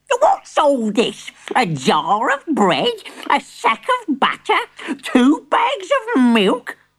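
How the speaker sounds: high, shrill shrieking voice. Reading a story aloud, a character's reply to the one who did the shopping: shrieking. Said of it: "she shrieked".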